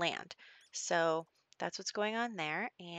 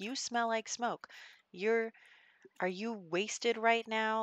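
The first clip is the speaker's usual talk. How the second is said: put-on scolding yell with pitch raised; 5 semitones higher than usual. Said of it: "I'm gonna yell at my son now".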